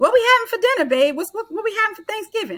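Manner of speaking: very high, loud, acted-out yelling. Retelling a husband calling from the family room: imitating someone yelling. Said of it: "He's yelling out from the family room".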